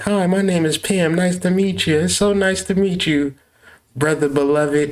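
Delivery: put-on polite good-girl voice. Acting out a woman who shows up proper in the daytime: mock innocent daytime persona. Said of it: "show up in the daytime like".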